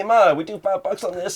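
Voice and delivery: put-on shrill, high, hollered Italian accent. Recounting a man calling out to his mom, retelling a yell in Italian accent. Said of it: "yelled out to his mom in like an Italian accent".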